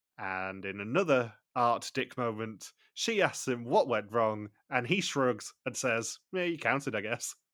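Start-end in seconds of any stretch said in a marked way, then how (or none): 6.4-7.4 offhand, dry, sarcastic, dismissive tone. Retelling a contestant's shrugging answer to what went wrong: imitating a sarcastic response. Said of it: "such a sarcastic response from him".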